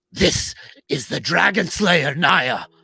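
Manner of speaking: loud, resounding, booming proclaiming voice. In a role-play scene, a talking sword announces itself: booming talking-sword voice. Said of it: "we then hear this booming voice".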